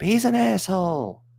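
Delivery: very high, shrill scream. Retelling a reply shouted up to the tower: imitating someone screaming up. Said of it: "he just screams up".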